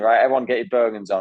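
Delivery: put-on, barked, commanding shout. Retelling an order to the team after a lake swim: retelling a shout at the team. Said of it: "shouting at my team".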